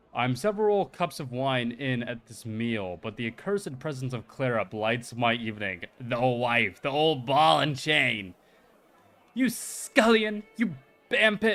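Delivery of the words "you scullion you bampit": very high, shrill, loud bellowing. At the meal, the narrator's old wife turns on him, bellowing. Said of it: "she bellows".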